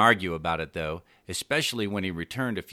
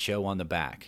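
usual speaking voice

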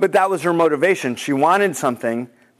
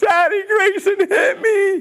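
mock, very high wailing cry of a little girl. A father retells his daughter running in about her brother; imitating Bella wailing. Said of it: "I hear Bella just start wailing, like crying".

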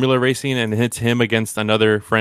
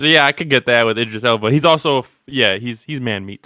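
normal talking voice

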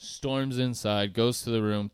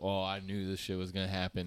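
mock sarcastic tone, quieter; 8 dB quieter than usual. Retelling how his girl reacted on arriving: imitating a sarcastic tone. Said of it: "most sarcastic".

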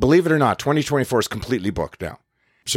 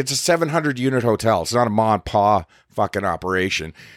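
ordinary delivery

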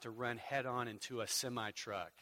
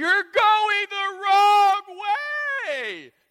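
booming, shrill holler, very slow, way stretched; 19 dB louder than usual. Retelling someone yelling out of a car window: imitating someone yelling. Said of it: "Jesus is yelling out the car".

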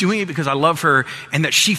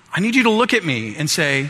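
usual speaking voice

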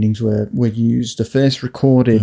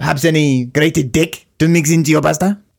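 fake French accent, put-on French waiter voice; 4 semitones higher than usual. Playing a waiter serving pasta to a customer, french waiter accent. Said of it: "He's a French waiter".

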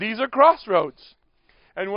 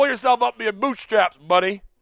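put-on regional New England accent. Imagining what the dad from New England would say, in a New England accent. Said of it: "He's from New England. He'd say".

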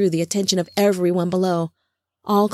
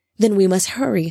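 plain

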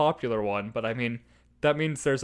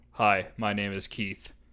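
low, flat, dead-level uninflected monotone; 4 semitones lower than usual. Retelling meeting someone for the first time, imitating Keith's monotone. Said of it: "It was a monotone".

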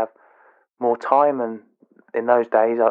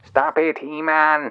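put-on cartoon villain voice; 4 semitones higher than usual. Insisting they can still do it, a line in Skeletor voice. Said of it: "I could do a good impression of Skeletor anyway".

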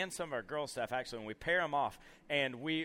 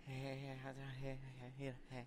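hushed, shy, very quiet and halting; 2 semitones lower, 16 dB quieter than usual. Imitating a quiet staff member's timid reply to a greeting: imitating Jackson's quiet timid voice. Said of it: "he's just a real quiet, real timid guy".

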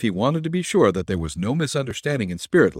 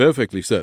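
ordinary delivery

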